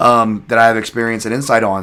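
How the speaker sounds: ordinary talk, nothing marked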